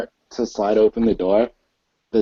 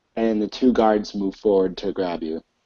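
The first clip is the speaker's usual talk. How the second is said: ordinary delivery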